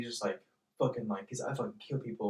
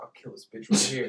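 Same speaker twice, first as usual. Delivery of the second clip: acted serious tone, faster. Telling a story about a man near a girl at a parking meter, retelling a serious threat. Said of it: "he was kind of serious".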